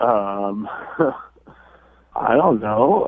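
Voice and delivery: nervous, uneasy, very slow, drawn-out hesitation. Answering a question about an unanswered text from a date, sounding a little nervous. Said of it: "you sound a little nervous".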